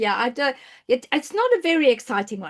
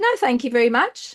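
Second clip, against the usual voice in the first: ordinary delivery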